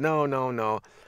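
ordinary delivery

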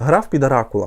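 plain

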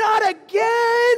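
very loud, high, heartbroken wailing sob. Parent retelling how their son broke down, imitating him crying. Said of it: "he just breaks down crying".

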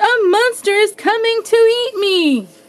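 very high, shrill, terrified squeal. The greedy bee, seeing two glowing eyes in the tall grass: frightened cry. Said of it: "he cried".

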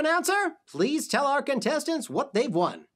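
ordinary talk

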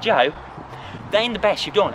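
ordinary delivery

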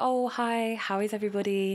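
polite put-on voice. Speaker describes how people change the way they talk, imitating a put-on polite voice. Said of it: "you go in and you speak like".

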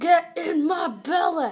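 loud, high ogre bellow. Speaker declares he is Shrek and goes after Doug: Shrek voice. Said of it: "I am Shrek".

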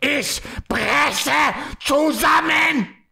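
very high, rough, furious-sounding German. Saying a german sentence for others to translate, angry-sounding german. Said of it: "Very angry".

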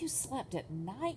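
gasped out. A bat in the crowd hears a young bat's story and gasps. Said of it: "gasped another".

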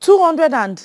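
loud shout. Told the amount to bring for Mama's birthday, shouting. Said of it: "Why are you shouting?".

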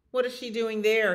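irate, demanding tone. A narrator voices Big Eddie asking after Bluebell, angry. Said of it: "he asked angrily".

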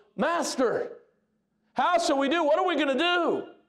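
frantic, high, panicked pleading tone. Retelling a bible story, voicing the frightened servant: imitating a panicked servant. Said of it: "and he goes".

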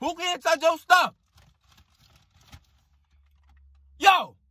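shrill, very high shouting. In a squabble over someone touching his stuff, yelling. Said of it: "Stop yelling!".

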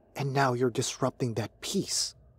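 ordinary delivery, nothing marked

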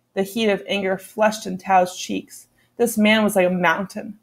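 plain reading voice

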